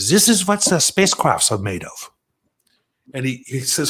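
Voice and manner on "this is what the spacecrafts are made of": put-on German scientist accent. Recalling being shown a strange material, the speaker quotes a man in a german scientist accent. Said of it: "I'll knock it off with the German scientist uh".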